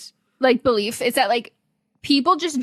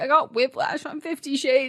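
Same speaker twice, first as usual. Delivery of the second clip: put-on giggling, barely getting the words out; 3 dB quieter than usual. Retelling an interview answer she can hardly get out: imitating someone laughing while talking. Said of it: "She's already laughing".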